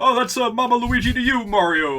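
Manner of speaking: very high, loud, squeaky cartoon voice. While streaming a Mario game, the speaker does Luigi's voice. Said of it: "my impersonation of Vinny's impersonation of the Mario Brothers".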